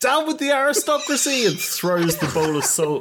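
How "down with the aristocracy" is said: yelled, very high-pitched, shrill outburst. Narrating the game as the character Mort walks up; Mort shouting. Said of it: "So Mort walks up and he shouts".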